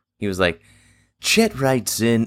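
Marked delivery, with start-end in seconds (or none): 1.2-2.3 pitched-up reading, emotional yet distant. Showing how a radio host read listener letters: Casey Kasem reading a listener letter. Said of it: "do this like a Casey, Casey Kasem reads a letter".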